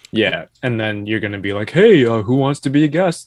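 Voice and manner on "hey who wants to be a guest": playful mocking put-on voice. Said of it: "that was a good impersonation of me".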